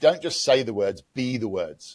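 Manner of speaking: ordinary delivery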